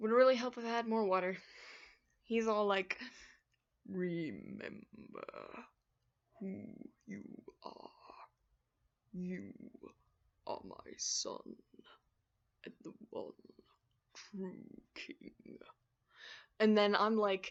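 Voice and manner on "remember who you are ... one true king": very quiet, breathy, deep, slow, drawn-out whisper. Doing a voice from a list of voices: Mufasa voice. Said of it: "I love his deep voice".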